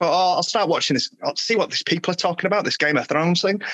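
ordinary talk, nothing marked

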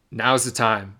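ordinary talk, nothing marked

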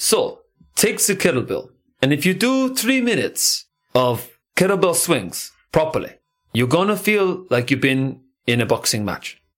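put-on, laid-on Russian accent. Quoting a kettlebell coach from his videos: Pavel's Russian accent. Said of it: "I will not try and do his accent".

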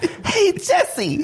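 youthful, very high voice. Showing others how priceless his voice was back then, imitating his younger voice. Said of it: "just the way he did his voice when he was younger".

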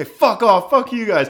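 play-acted, very high, loud shouted yell. Recounting a man being kicked out of a bar, retelling his yell. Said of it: "he yelled at him and was like".

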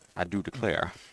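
Southern way of talking. Comparing a Scotch and pipe tobacco pairing, letting a Southern accent come out. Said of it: "my Southerner is coming out here".

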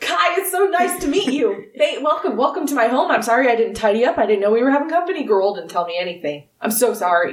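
gushing, enthusiastic, eager sing-song tone. Narrating a scene, voicing Wulfric as he greets Kai: enthusiastic Wulfric greeting. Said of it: "reaches out to shake your hand very enthusiastically".

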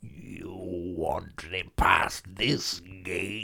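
very slow, drawn-out alien voice. Performing a voice on request: alien gatekeeper voice. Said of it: "Alien Gatekeeper".

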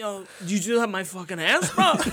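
put-on New York accent. Retelling what a man said after getting slapped, the speaker quotes him: new york accent. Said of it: "that's a New York accent".

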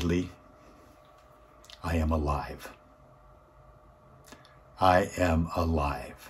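choked-up voice, very slow words. Retelling what a grateful man told the speaker: imitating someone choking up. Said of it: "He's choking up".

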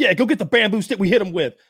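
acted rapid shouting. Imitating a prison guard giving an order: imitating a guard yelling fast. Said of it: "yelling his second in command".

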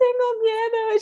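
mock weepy sob, very high tearful crying voice. Retelling Camila's answer when asked what was wrong: imitating Camila crying. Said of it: "She's like crying".

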